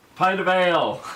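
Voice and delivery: shouted, loud and high. Ordering from the innkeeper in character, yelling back. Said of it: "I yell back".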